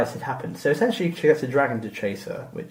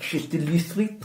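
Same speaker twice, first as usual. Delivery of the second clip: put-on French accent, higher and quieter; 3 semitones higher, 4 dB quieter than usual. Explaining a joke about a local street name, the speaker says it in a French accent. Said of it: "say it with the uh, the French accent".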